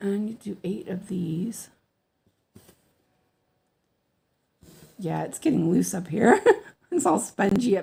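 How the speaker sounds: hoarse, husky voice. Giving instructions to viewers after apologizing for a sudden hoarse voice. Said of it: "my voice is a little hoarse all of a sudden".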